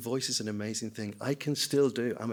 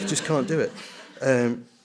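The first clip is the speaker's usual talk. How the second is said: normal talking voice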